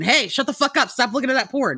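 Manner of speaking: put-on harsh shouting. Retelling yelling at children while playing a character: imitating own yelling. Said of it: "yelling at these children".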